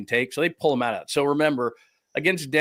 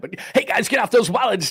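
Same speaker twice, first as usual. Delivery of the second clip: very high put-on club emcee announcer patter; 9 semitones higher, 4 dB louder than usual. Showing the stripper voice done many times before, a put-on club announcer voice. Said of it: "I did the stripper voice many, many times, and I could certainly do it on, you know, on, on demand like that".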